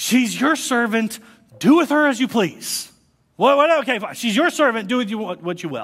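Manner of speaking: loud, high, frustrated and exasperated giving in. A speaker retelling a Genesis story gives Abraham's reply; mock-frustrated Abraham. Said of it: "I can almost hear the frustration in his voice".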